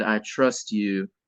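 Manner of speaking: mock icy, chilly, cold tone. Recalling what someone said the day before a recording session, retelling a cold delivery. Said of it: "and like real cold".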